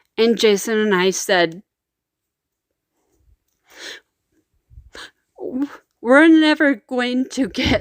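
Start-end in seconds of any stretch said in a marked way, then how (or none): 6.0-7.8 tearful voice, crying through the words. Recalling deciding they would never get to raise children: crying. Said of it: "I'm crying again".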